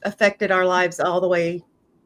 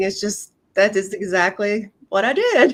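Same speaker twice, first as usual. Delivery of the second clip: words broken up by laughter throughout. Answering a question about chasing shiny objects, laughing while talking. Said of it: "I'm sorry, I'm laughing".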